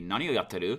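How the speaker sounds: rising, question-like pitch at end of yatteru. Showing how men drop the japanese end particle: rise at the end on yatteru. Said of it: "have a rising intonation of it".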